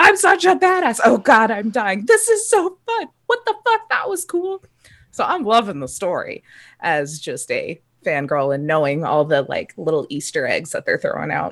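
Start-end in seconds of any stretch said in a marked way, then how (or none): 0.0-4.6 very high, gleeful, excited shrieking. Telling about voice chat with a friend during a game: acting out excited screaming. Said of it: "and then screaming like".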